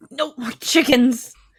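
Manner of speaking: put-on drunken, slurred, mumbled grumble. Voicing a sloshed Walter as the others walk over him, drunkenly muttering. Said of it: "you just hear him muttering".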